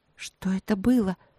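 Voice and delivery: shaky, trembling, frightened voice. Narrator voicing the princess's question, in a trembling voice. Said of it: "дрожащим голосом спросила принцесса".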